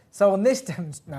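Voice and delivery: laughing while talking. Stumbling over the word demonstration during a demonstration, laughing while talking. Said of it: "I can't stop laughing".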